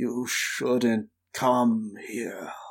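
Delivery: rusty, creaking voice. A game narrator voicing a worker who warns a visitor off: creaky voice. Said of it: "his voice creaky from disuse".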